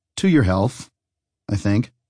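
plain reading voice

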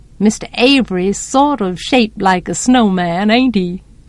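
plain

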